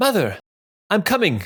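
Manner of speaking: very high, carrying, projected calling voice. Voicing a son answering his mother upstairs: calling out upstairs. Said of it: "call out".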